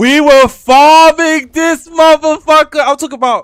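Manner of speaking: very loud, very high, drawn-out hype shout. Telling another player about a combat bug in the game: shouting. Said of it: "I'm shouting".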